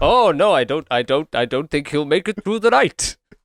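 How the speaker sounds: overexcited voice with rising pitch. Mocking how the doctor delivered his line in that take, imitating an excited doctor. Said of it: "why is this doctor so excited?".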